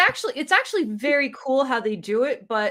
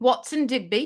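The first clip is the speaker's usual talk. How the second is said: put-on British accent. Calling the dog's name in a put-on British accent. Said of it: "it's in a British voice because he is British".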